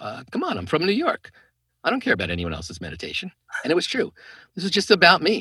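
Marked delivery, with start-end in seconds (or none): 0.0-3.3 mocking, swooping, sarcastic tone. Retelling a past reply to a friend's suggestion: imitating own sarcastic reply. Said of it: "sarcastically replied to him".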